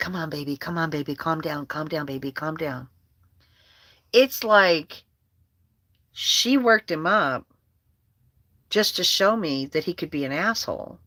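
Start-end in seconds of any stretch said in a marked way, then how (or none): 0.0-2.9 mock sugary, soft, sweet, soothing coaxing. Retelling a wife calming down her angry husband, with mock-sweet coaxing. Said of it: "being all sweet".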